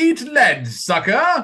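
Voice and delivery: very high, swooping put-on English robot voice. Arguing with others over how it says the line, English accent. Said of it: "But it but it says it with an English accent".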